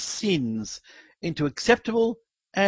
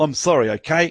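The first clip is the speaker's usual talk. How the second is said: acted sarcastic, insincere mumble; 5 dB louder than usual. Retelling a boy's words to his insisting father, acting out a sarcastic insincere mumble. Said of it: "in the most sarcastic and insincere manner, the boy mumbled".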